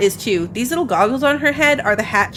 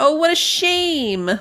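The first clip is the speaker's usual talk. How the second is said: sarcastic, mock sympathy; 7 semitones higher than usual. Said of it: "You don't have to be sarcastic about it".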